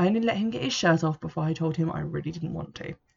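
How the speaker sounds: plain reading voice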